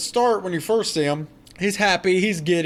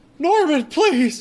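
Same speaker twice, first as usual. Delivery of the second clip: thin, very high-pitched whining voice; 10 semitones higher, 4 dB louder than usual. Co-hosts retelling a scene where a voice halts the axe; Krampus's put-on whiny voice. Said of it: "Whiny voice".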